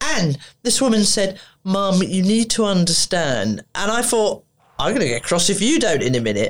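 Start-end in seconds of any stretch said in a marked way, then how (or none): 1.6-3.6 slow, patronising, talking-down tone. Retelling what a woman in an office told the speaker, imitating a patronising voice. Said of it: "the whole voice was so bloody patronising".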